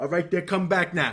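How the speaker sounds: high, puffed-up, military-style strutting boss voice. Imitating an old boss talking to the ladies. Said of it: "and we talk like this".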